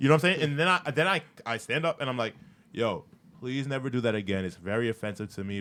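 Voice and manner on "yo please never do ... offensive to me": mock flat, level, dead-even monotone. Retelling standing up to tell someone off, the speaker is retelling in flat monotone. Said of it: "it's literally in this monotone thing".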